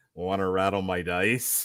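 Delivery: slow, soft half-whisper close to the ear. Acting out a pickup line half-whispered in an ear: half-whispering a pickup line. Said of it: "whispers in her ear".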